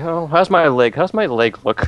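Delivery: anxious, fretful, paranoid worry, high and slow. Voicing a character asking how their hurt leg looks: paranoid. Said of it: "Tony's a little paranoid now".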